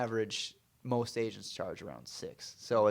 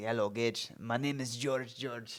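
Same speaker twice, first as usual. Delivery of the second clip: put-on Greek accent; 4 dB quieter than usual. Retelling a first meeting with a client: imitating George's Greek accent. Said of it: "so he had a Greek accent".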